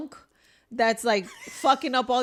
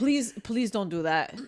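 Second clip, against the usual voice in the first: put-on respectful, pleading tone; 3 semitones lower than usual. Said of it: "Very respectfully".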